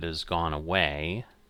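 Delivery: plain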